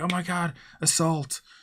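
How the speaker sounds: very high, alarmed screaming shriek. Describing an example game scene, voicing onlookers acting a scream. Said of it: "people are screaming around".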